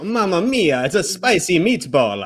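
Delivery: put-on Italian accent, spoken very slowly. Suggesting a line for a pizzeria bit: put-on italian accent. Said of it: "with, like, an Italian accent".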